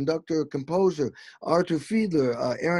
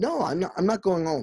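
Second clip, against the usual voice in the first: defiant, firm, dug-in tone. Retelling refusing to go home when told to leave: retelling own defiant refusal. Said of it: "got in that fight mode".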